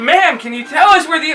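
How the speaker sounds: very high-pitched, shrill scream. Retelling asking a woman the same question again after she kept saying what, screaming. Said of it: "I'm screaming at this point".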